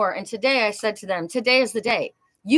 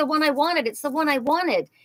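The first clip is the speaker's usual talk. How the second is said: mock angry, upset, let-down, disappointed tone; 4 semitones higher than usual. Imitating someone who did not get what they wanted: imitating an upset person. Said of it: "She's really pissed off".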